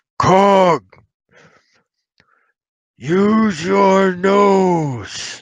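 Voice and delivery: very slow, drawn-out, stretched hands-cupped distant call. Voicing a character calling to a companion across the river: calling out loudly. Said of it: "cup his hands around his mouth and be like".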